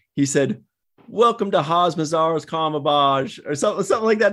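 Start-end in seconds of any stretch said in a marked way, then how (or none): 1.1-3.4 put-on English-sounding British accent. Retelling how Book said the name: Book's British accent. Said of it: "the way Book said it".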